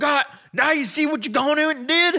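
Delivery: very high put-on Southern American accent. Retelling a guy's reaction during an argument over a bowl of chips: imitating a southern us accent. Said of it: "Southern like America guy".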